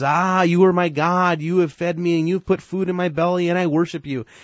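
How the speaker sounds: high, loud, dripping sarcastic worshipful devotion. Retelling a man bowing to his carved wooden idol, quoting him in a sarcastic tone. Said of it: "in just this very sarcastic tone".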